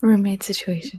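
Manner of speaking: hushed whisper close into the mic. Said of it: "huddled up to the mic whispering in it".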